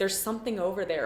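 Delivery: plain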